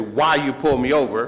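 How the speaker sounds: normal talking voice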